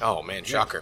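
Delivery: super sarcastic, fake-sounding surprise, heavy and obvious. Reacting to someone admitting they are bad at accepting help: super sarcastic. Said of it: "I'm being super sarcastic".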